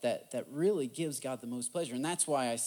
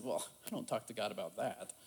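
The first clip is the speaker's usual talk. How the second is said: mock dry, soft, sarcastic, nearly laughing; 3 semitones lower, 5 dB quieter than usual. Retelling a man's reply to a question, mock sarcastic near-laugh. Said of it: "he almost laughed sarcastically".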